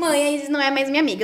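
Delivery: imitated crying child voice. Retelling a child's complaint to his mother: imitating a crying child. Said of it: "Aí ele vem chorando pra mim".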